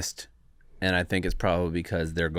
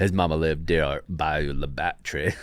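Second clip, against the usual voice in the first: put-on Alabama drawl; 2 semitones lower than usual. Answering the group, in a Forrest Gump impression. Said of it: "You're a good impersonator".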